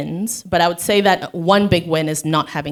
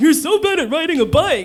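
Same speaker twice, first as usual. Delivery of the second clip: very high, ridiculous, silly put-on voice; 11 semitones higher than usual.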